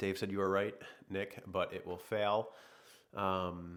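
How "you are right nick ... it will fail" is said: ordinary delivery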